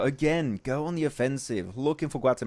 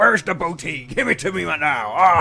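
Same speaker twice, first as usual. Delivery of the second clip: very loud, high, awful pirate voice; 5 semitones higher, 8 dB louder than usual. Casting a match, joking about loot: terrible pirate voice. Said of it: "My pirate voice is so, so terrible".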